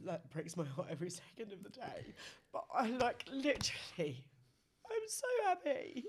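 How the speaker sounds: talking through tears. Talking about being happy and proud, crying while talking. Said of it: "Why am I crying?".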